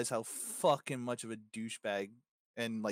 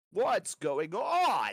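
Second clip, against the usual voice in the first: loud, pompous, high-pitched voice; 8 semitones higher, 5 dB louder than usual. Imitating how a game villain always talked: Liquid Snake impression. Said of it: "that dude would always be like".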